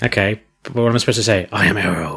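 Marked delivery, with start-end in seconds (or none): 1.5-2.2 deep, gravelly heroic voice. Saying a superhero line after being teased: Arrow with Batman voice. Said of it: "So Arrow with the voice of Batman".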